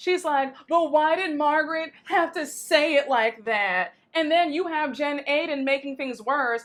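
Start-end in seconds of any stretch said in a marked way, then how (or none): 0.7-3.9 mock whiny, aggrieved, complaining tone. Retelling a cast member's complaint, imitating Jackie whining. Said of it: "Jackie is still whining".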